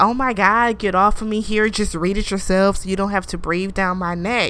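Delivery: ordinary delivery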